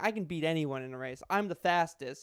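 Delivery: ordinary delivery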